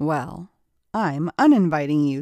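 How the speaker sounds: ordinary delivery, nothing marked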